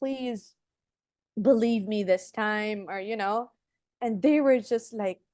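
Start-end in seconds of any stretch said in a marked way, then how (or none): 0.0-2.9 begging, pleading tone. Retelling begging the people who said no: retelling own past begging. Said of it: "I was begging".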